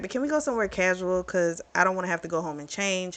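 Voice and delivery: ordinary talk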